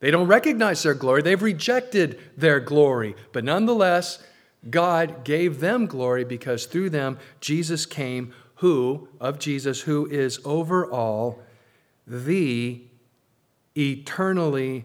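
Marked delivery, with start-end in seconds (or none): 9.8-14.8 slow, careful reading, long pauses, every word weighed. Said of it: "I'm reading this slowly and carefully".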